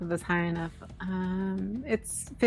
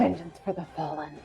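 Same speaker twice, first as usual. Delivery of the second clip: eerie, strange half-whisper, unlike usual voice; 3 semitones lower, 4 dB quieter than usual. Voicing a character as she kills a foe: weird strange half-whisper. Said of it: "whisper in a weird, kind of strangely, strange voice".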